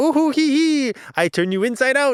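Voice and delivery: very high, mocking clown cackle. Retelling a demon in a book chapter, like Pennywise: mocking clown laughing voice. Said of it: "mocking clown laughing".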